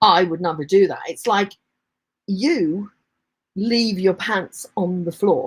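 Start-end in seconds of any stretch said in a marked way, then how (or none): 2.3-5.5 condescending, contemptuous, superior talking-down tone. Showing how tonality alone can mean you're less than, contemptuous superior tone. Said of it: "it can be just tonality".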